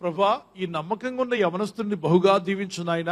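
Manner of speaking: normal talking voice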